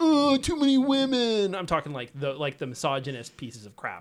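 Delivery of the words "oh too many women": shrill, very high, booming, dragged-out whining voice. Mocking the crying fanboys who complain: mock-whining as a crying fanboy. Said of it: "the crying fanboys who are like".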